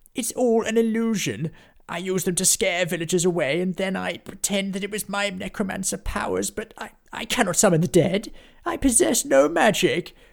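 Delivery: very high, trembling, quivering, terrified begging. A fake necromancer drops to his knees before an attacker: scared, quivering begging. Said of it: "He was just very scared and a little bit normal. He began to quiver and then he dropped to his knees, begging".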